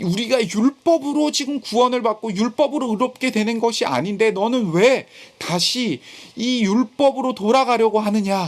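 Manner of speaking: shouted, reproachful tone. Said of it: "지금 소리를 치고 베-, 바-, 베드로를 책망하고".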